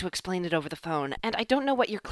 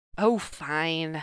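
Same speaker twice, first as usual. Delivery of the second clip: low muttering, mumbled; 3 semitones lower than usual. Darcy replies to the other speaker, muttered. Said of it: "Darcy muttered".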